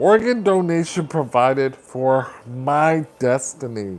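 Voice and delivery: ordinary talk, nothing marked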